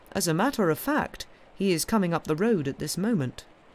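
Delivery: plain reading voice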